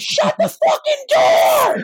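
very high, drawn-out shout. Recalling how she shouted across the room over the bands: imitating a shout across the room. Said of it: "she just shout from across the room".

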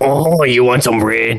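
put-on weird French-accented ghoul voice. Retelling a ghoul that walked by their shelter, in a French-talking ghoul voice. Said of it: "weird ass French talking ghoul".

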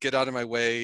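ordinary talk, nothing marked

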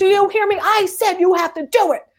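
put-on, very high, shrill yell. Speaker retells an argument, acting out the other man's words; retelling someone yelling. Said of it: "And he's yelling".

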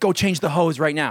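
high, screamed delivery. Telling a story about a first job, the speaker imitates a man screaming an order at him. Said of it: "he's just like screaming at me".

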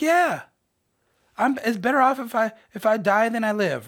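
high, loud, pissy tone. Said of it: "He's like".

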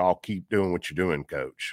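put-on dismissive voice. A coach retells what a team member told him, mock-dismissive. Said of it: "he just kind of dismissively said".

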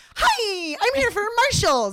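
shrill, very high, loud, drawn-out swooping voice. Imitating a celebrity's targeted ad on Instagram: imitating Reese Witherspoon's shrill voice. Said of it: "her voice comes in so shrill".

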